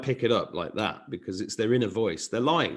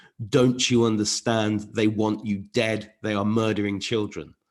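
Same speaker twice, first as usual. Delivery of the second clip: normal talking voice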